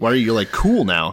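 ordinary talk

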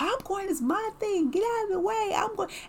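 mock, shrill, very high, loud barking rant. Retelling her husband blowing up at her boyfriend, retelling angry barking. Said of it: "he's like barking at him like".

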